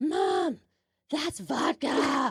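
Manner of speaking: put-on high, loud, raspy child's voice, shouting. Mother retelling her son screaming out in front of everyone, little raspy kid voice. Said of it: "in his little raspy voice that he had".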